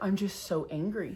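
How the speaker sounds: put-on slow, tearful delivery, words coming through tears. Retelling opening the door to a friend: retelling crying. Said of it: "I just burst into tears".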